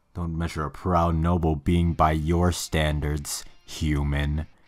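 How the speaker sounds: deepest voice possible. Reading a female character's line aloud: deepest voice possible. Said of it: "Just the deepest fucking voice I could do".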